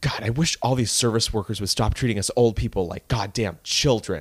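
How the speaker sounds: put-on muttering under breath. Retelling what a customer said under her breath: imitating muttering under breath. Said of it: "said something under her breath like".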